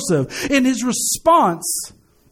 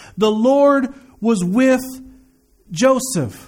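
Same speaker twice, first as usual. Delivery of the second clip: slow, careful, deliberate, word by word. Speaker rereads a verse for listeners who may have missed it, reading slower. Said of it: "I'm going to read it a little slower".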